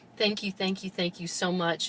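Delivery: ordinary delivery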